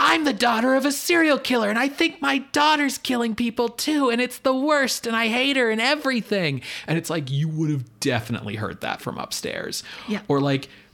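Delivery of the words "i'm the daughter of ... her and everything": very high, frantic, shrieking run-on screaming, acted out. Recapping a show, acting out a woman screaming with her dad: imitating someone screaming. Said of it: "just like screaming like".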